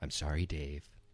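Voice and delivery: speaking as a ship's computer. Quoting a movie line to the others: HAL impression. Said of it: "That's kinda how he talks".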